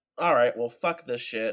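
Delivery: ordinary delivery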